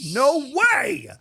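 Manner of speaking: very high, loud, stunned, shocked disbelief. Retelling own reaction the moment a friend interrupted: retelling own shocked exclamation. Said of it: "as soon as you did it, I was like".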